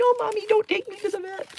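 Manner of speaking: very high, begging, pleading cat voice. Voicing the cat, who thinks he must go to the vet, pleading.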